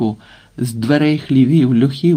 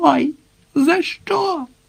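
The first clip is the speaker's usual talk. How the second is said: piercing little squeal, very high and thin. Narrator reads a nobleman crying out as he is struck, thin high-voiced shriek. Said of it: "тоненьким голосом вереснув".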